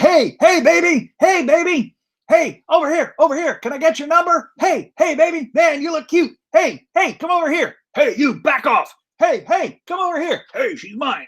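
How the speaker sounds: very high-pitched, strutting, show-off patter. Voicing a male fish showing off to females: male fish showing off to females. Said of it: "the males are basically swimming over these algae-covered rocks, going".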